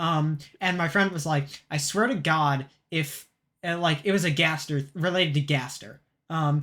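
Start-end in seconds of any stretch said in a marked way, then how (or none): none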